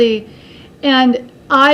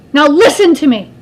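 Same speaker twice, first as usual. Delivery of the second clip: put-on loud woman's voice; 3 semitones higher, 6 dB louder than usual. Retelling a scene with their mother, the speaker imitates her loud voice. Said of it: "My mother would be the one with the loud voice".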